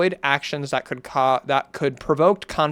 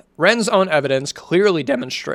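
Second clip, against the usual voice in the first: cracking, breaking voice; 2 semitones higher, 4 dB louder than usual. Reading a long document aloud for over an hour, voice cracking. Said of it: "Voice crack".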